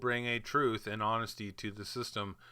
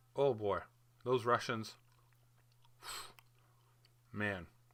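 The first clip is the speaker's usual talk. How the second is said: emotional, moved, choking up. Praising Russian people as good friends for life, getting choked up. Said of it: "I'm getting choked up here".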